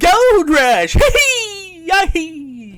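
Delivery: very high, loud, slow prospector-style whoop. Imitating an old prospector character from a game show. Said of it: "Drew Carey and his old prospector".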